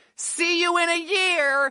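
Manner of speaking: slow, high screamed yell. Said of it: "the guy screamed out".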